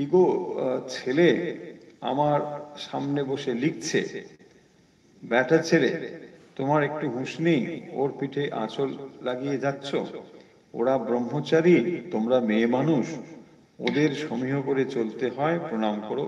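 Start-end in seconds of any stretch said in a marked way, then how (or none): none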